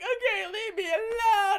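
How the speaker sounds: put-on very high, loud, blubbering boyish wail. Retelling how a man reacted to being laughed at, imitating a sad boy cry. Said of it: "into like a sad boy cry".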